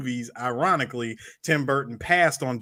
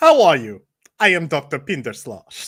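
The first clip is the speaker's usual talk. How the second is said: very loud, shoddy, terrible put-on German accent; 8 dB louder than usual. Recounting someone's mother's awful accent: bad fake German accent. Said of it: "the shittiest German accent ever".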